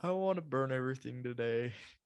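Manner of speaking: usual speaking voice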